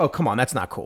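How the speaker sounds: usual speaking voice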